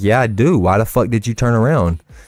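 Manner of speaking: put-on aggressive voice. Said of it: "You don't have to be so aggressive".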